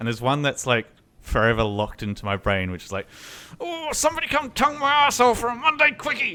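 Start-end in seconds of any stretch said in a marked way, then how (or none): 3.6-6.4 play-acted, shrill, very high yell. Retelling an opening line from a racing video: imitating Smith yelling. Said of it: "yell something in that voice".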